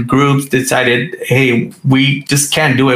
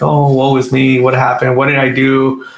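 fake self-pitying crying whimper. Joking about how he would react to a layoff, mock crying. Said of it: "in a corner crying like".

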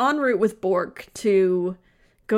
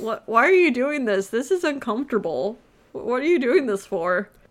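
baffled, bewildered, totally lost, protesting tone; 4 semitones higher than usual. Retelling a game scene where Zach punches Bork, in a mock-baffled Bork voice. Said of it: "Bork's face is just like".

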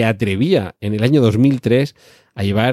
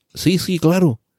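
put-on thick, heavy, closed Catalan accent, pitched up; 7 semitones higher than usual. Retelling asking an actor for a photo, imitating Benito Pocino's thick Catalan accent. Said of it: "habla así con un acento catalán muy cerrado".

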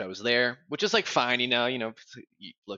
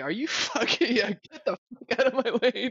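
play-acted very high, furious, enraged outburst; 13 semitones higher than usual. Recalling an in-game moment after being told to make a sandwich, retelling own angry outburst. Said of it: "I was legit almost got so mad".

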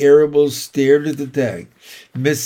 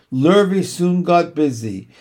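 ordinary delivery, nothing marked

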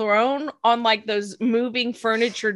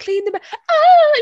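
mock swooning collapse, higher and louder; 8 dB louder than usual. Retelling a character's line as she faints: imitating a dramatic faint. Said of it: "She literally does that, like, the hand up on the forehead".

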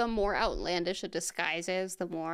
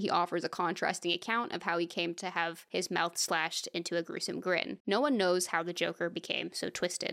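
ordinary talk

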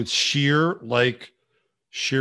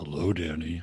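very low, soft, sultry voice; 10 semitones lower, 8 dB quieter than usual. A guest greets the podcast host as their conversation starts; sultry voice. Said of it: "I get the sultry voice".

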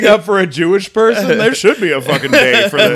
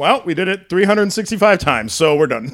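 ordinary delivery

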